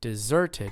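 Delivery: deserted stressed on second syllable. Pronunciation lesson pointing out the syllable, stress on ser in deserted. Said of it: "Do you notice how it's on the second syllable?".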